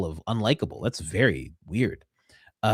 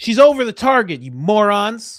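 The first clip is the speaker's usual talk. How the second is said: screaming, higher and louder; 12 semitones higher, 6 dB louder than usual. Coming in again to yell at the others, screaming. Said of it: "come in here like this all the time and scream".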